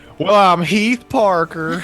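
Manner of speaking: put-on Southern belle accent. Introducing a character in a roleplaying game: Southern belle voice. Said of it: "When did Heath become a Southern Belle?".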